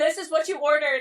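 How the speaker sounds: put-on confrontational, aggressive, hostile tone. Retelling what the guy said when the order was questioned: imitating an aggressive retort. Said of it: "the guy just immediately gets so aggressive".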